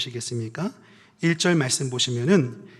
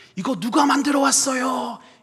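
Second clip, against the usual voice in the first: reproachful Gyeongsang tone, very high on "do"; 10 semitones higher, 3 dB louder than usual. Imitating someone's opening remark, tone like a high do: high-pitched Gyeongsang-style tone. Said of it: "그 톤이 이렇습니다. ... 낮은 도 말고 높은 도. ... 경상도 말투 같아요. 이렇게 말합니다".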